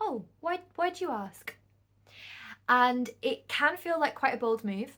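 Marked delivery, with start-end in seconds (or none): 0.0-1.5 calm, gentle, courteous, polite, lightly pitched up. Advising how to dodge an unwanted question, demonstrating a calm, polite reply. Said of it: "just very calmly, very politely go".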